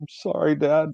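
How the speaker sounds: put-on soft, high, meek, sorry, sad little-girl voice. Comparing a sad look to a sitcom scene: imitating a sad little girl. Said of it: "like what you would see in a, on Full House".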